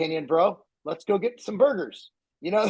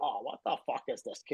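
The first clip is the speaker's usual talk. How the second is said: put-on older voice, lower and quieter; 6 semitones lower, 12 dB quieter than usual. Showing how everybody at work imitated Joe Weider: Joe Weider impression. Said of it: "Everybody could do a Joe Weider".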